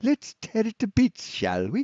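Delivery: put-on failed Scottish accent. Trying out a line in a put-on voice: bad Scottish accent. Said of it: "I can't do a good Scottish ac-".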